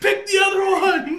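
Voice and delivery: put-on frantic panic, very high and loud. Imagining a producer in the back as a curtain is picked, imitating someone panicking. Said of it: "Somebody's panicking".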